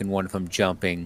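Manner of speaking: normal talking voice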